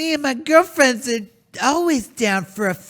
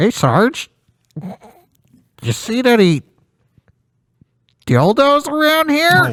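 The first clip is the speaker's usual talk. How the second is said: loud, goofy cartoon voice, belted out; 5 dB louder than usual. Showing how the character Donut will sound in a new dub: Donut cartoon voice. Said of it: "It's going to sound like this".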